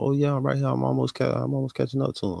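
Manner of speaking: calm, quick, unbothered voice. Retelling how she sounded on the phone, imitating a calm phone voice. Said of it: "she was so calm on the phone".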